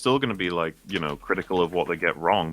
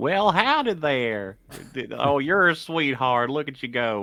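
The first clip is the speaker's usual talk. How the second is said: pitched-up, folksy hillbilly voice; 7 semitones higher than usual. Doing a requested impression of the most positive critic: hillbilly voice. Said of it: "hillbilly guy who's like".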